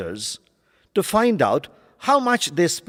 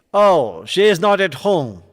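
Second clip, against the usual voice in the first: rude, impolite tone with pitch falling away; 4 dB louder than usual. Demonstrating answering a caller who asks for Mrs Leela, with rude falling intonation. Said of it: "In falling intonation to create a rude and impolite tone".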